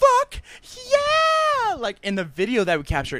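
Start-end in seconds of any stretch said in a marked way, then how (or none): 0.0-1.7 very high shrieked cheer, yeah drawn out long. Recalling a friend's reaction captured on video, imitating her screaming. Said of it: "She was screaming like".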